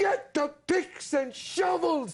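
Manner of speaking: mock loud shouting. Retelling his big entrance at an audition: imitating his own loud shout. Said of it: "I'm blowing the paint off the wall".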